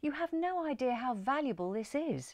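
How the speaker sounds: earnest, high, imploring, pleading voice. Answering doubts about the large new mirror over the mantelpiece; imploring. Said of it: "Jerry implored".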